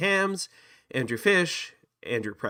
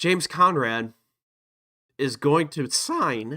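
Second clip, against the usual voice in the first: voice breaking and cracking midway. Speaker making a bold prediction about a player signing, voice cracking. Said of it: "my voice cracked there".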